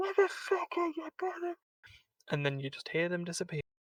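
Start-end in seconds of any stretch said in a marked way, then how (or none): 0.0-1.5 muted, muffled, very high-pitched cheer. Retelling what is heard after killing someone in the game: imitating a very muted voice. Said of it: "in a very muted voice".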